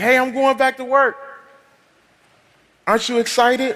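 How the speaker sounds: very high, thrilled, eager excited burst, acted out. Retelling the morning the partner came in announcing a return to work: imitating someone really excited. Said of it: "you came in really excited".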